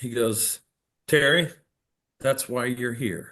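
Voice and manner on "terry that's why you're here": play-acted dry sarcastic tone. Retelling his reply to a question about the books: imitating a sarcastic remark. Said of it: "he came back with a real sarcastic remark".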